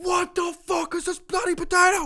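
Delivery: very high, furious put-on angry chef yell. Imagining a scene where Gordon Ramsay is yelling at a potato guy: Gordon Ramsay yelling. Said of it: "Gordon Ramsay just yelling at him".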